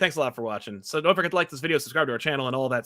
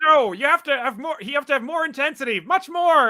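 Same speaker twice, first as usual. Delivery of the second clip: mock puppet-style yelling voice; 13 semitones higher, 4 dB louder than usual. Retelling a blooper reel, play the director demanding more from an actor, Frank Oz yelling, Bert or Fozzie-like. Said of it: "he sounds like Bert from Bert and Ernie or Fozzie".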